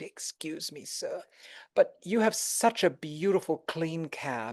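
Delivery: play-acted nicest, sweetest polite tone, soft and slow. Retelling what a woman from texas said to the cab driver, imitating a very nice request. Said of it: "she said in the nicest way".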